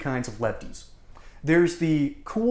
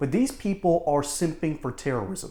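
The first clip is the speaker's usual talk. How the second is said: normal talking voice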